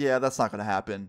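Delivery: plain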